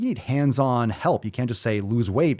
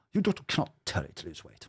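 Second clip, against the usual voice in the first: mocking fancy upper-class put-on accent; 6 semitones lower, 8 dB quieter than usual. Mocking a doctor in a video by repeating her line: mocking monocle-wearer accent. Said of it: "I feel like I need a monocle with that accent".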